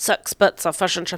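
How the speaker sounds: attempted, put-on New Zealand accent. Testing the accent on a sample line, in an attempted Kiwi accent. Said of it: "I can't do a Kiwi accent. I wish I could. Let's try it".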